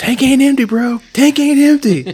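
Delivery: very high, very loud, shrill shout. Telling about a 20-mile bike ride and acting out own words: retelling a yell. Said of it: "And then I started yelling".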